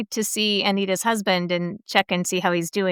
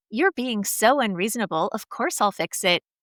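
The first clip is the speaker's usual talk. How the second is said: ordinary talk, nothing marked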